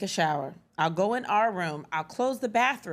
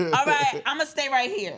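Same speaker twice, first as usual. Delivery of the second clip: put-on kid voice, higher pitched; 5 semitones higher than usual. Retelling a child interrupting a shower: Cameron impression. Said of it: "That was my Cameron impression".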